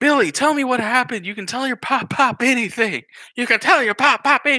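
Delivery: high, sobbing, crying, pleading voice. Retelling what a father said to his son, imitating someone crying. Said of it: "He's just like crying".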